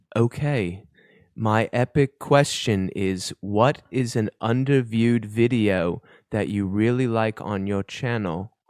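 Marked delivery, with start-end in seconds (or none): 1.4-8.5 slow, put-on, poorly done British accent. Asking an epic question as Jed Draws, in a bad British accent. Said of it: "I'm gonna give my best Jed Draws impression here. ... I have the worst British accent".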